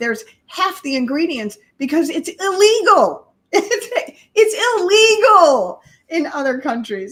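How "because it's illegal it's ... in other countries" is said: loud, heated, upset shouting. A speaker gets upset while talking with another person: shouting, upset. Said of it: "I'm shouting".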